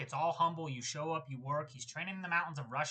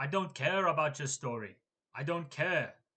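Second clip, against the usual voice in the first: flat, emotionless put-on monotone voice. Retelling what Dricus said to his opponent: monotone Dricus impression. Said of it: "with so little emotion".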